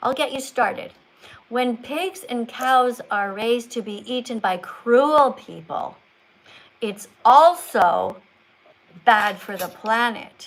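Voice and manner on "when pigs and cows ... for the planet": very slow, exaggerated storybook reading voice. Showing how to read a book to a child, slow exaggerated storybook reading. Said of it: "read it slowly like you're talking to a kid".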